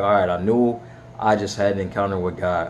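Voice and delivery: ordinary talk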